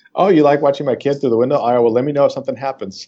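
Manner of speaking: put-on sarcastic smart-aleck tone. The speaker imagines their own reply in a past conversation about their kids: acting out a sarcastic smart-aleck reply. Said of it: "the sarcastic smart aleck that I am".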